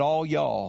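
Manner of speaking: put-on twangy accent. Imitating Galilean fishermen as the preacher pictures their speech: twang. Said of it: "spoke with the twang and said".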